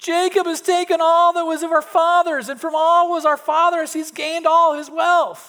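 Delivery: very high, very loud, shrill whining voice. Reading the sons of Laban's words aloud to kids, in a whining voice. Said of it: "does that sound like a whining voice?".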